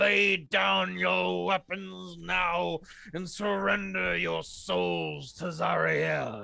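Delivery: grating, rough, creaky demonic voice. Voicing the tower's devil guards as they call out, demonic voice. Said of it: "call out in their demonic voices".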